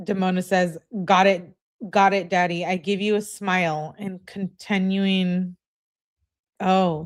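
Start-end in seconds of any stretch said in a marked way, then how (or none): none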